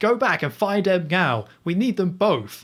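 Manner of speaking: badly acted angry voice. Retelling a film scene where someone on the phone is mad: imitating someone shouting angrily. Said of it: "he's on the phone and he's all mad".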